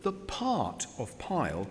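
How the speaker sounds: emphasized words drawn out slow and wide.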